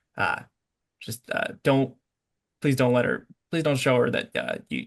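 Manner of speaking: hushed, whispered speech. A narrator voices a character who whispers a plea to the player; whispering. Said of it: "he kind of whispers to you".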